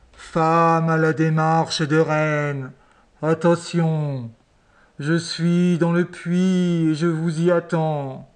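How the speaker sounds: low, ghostly, calling voice. A voice rises from the well to the chief's wives: voice from beyond the grave. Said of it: "une voix d'outre-tombe sortit du puits".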